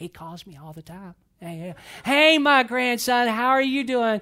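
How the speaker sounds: put-on chatty, friendly tone. Retelling a phone call, imitating grandmother's sociable phone tone. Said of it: "her tone changes when I call".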